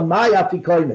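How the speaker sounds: ordinary talk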